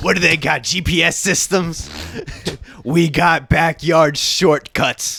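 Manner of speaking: high, loud mock kid-gangster bragging, slow at end.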